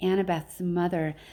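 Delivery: plain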